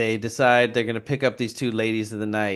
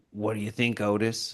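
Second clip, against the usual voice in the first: mock imposing, intimidating, menacing, threatening delivery; 4 dB quieter than usual. Retelling a scene where Henry asks Otis out for beer: imitating Henry intimidatingly.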